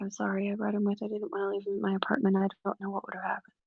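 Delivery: barely-there, super quiet half-whisper, held close. Voicing a character who half-whispers an apology to Shadowhound: quiet half-whisper. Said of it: "super quietly whisper to Shadowhound".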